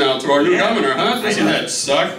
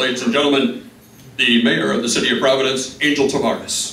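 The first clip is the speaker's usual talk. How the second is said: put-on radio announcer voice, much lower; 6 semitones lower than usual. Speaker imitating the announcer who introduces the mayor, in a radio announcer voice. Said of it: "radio voice".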